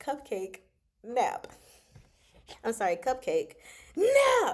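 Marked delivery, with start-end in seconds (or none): 3.0-4.5 very high-pitched, loud, bossy yell. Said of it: "Why are you yelling at me".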